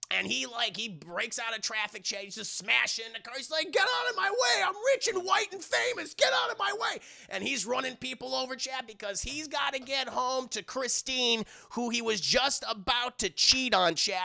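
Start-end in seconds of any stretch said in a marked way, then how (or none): 3.7-7.0 very high, frantic, freaked-out yelling. Recapping a scene where a man smashes through traffic, imitating a freaked-out shout. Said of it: "he fucking freaks out".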